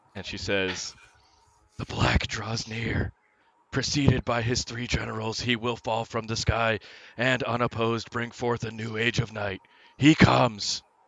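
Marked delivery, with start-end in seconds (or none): 1.8-10.8 booming, very loud, slow possessed voice, not her own. A girl's eyes roll back as a different voice comes out of her. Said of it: "a different voice comes out of her".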